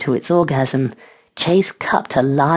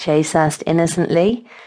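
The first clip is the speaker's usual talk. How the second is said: usual speaking voice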